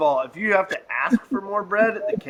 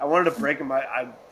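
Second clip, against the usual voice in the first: ordinary talk, nothing marked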